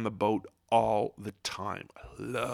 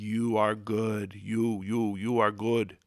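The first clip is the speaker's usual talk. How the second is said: the word "you" repeated, stumbling out. Retelling the Analyze This scene where De Niro leans into Billy Crystal, De Niro impression. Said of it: "he's like".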